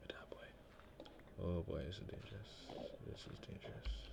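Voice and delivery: cautious hushed whisper.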